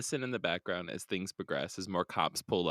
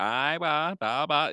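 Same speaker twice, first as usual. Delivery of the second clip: very slow, high New England drawl; 7 semitones higher, 5 dB louder than usual. Imitating a cop on the radio who sounds like JFK: imitating a New England accent. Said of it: "He's the one that sounds like J F K".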